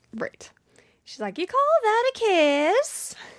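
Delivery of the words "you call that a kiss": very high, eerie, drawn-out voice, "kiss" stretched. Describing a video of a reluctant kiss, imitating the girl's voice. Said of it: "Why does she sound exactly like that? It's scary".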